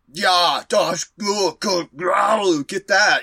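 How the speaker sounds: mock Austrian accent, slowed. Describing characters who sound Austrian, quoting them; Arnold-style Austrian accent. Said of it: "They sound like Austrians".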